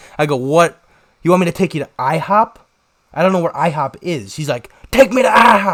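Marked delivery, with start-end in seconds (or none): 4.9-5.8 mock screaming, much higher, louder, slower. Speaker retelling a man he grabbed on the road, imitating a man screaming. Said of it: "screaming at me".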